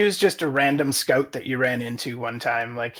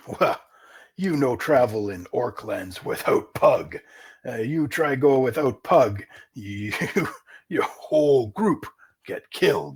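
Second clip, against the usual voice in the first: orc character voice, slower. The orc scout Pug answers a request to come along, Pug orc voice. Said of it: "and it's not long before you come across an orc scouting party. / Okay, he pockets the gold piece and he laughs with his other orc scouts. / Okay, he pockets the gold piece and he laughs with his othe".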